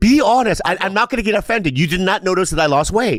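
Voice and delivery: insistent, worked-up tone.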